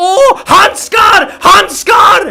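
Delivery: shrill, very high, all-out loud screaming cry. Act out his reaction to getting a glove, Anomaly impression, screaming. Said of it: "That's what he screams when he gets a glove".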